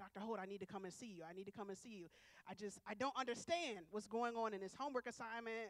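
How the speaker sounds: plain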